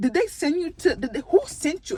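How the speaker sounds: teasing, playful put-on native home accent. Retelling a playful reply to a coworker: putting on own accent. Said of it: "And I put in my accent".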